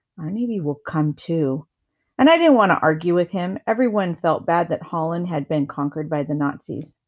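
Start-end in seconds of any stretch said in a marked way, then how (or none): 0.2-1.7 quiet, soft, hushed voice. A narrator reads a character's reply in a wartime conversation; said quietly. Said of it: "Henrique said quietly".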